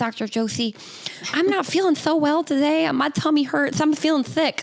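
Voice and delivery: high, lisping, sickly little dog voice. Retelling how an older lady spoke as if she were her Shih Tzu, in a lisping dog voice. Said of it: "talk to me as though she was her dog with, with a lisp".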